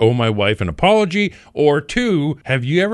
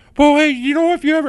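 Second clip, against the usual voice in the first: woman's voice, very high-pitched; 12 semitones higher than usual. Retelling how the wife interrupted during live TV: imitating wife's voice. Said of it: "in her voice".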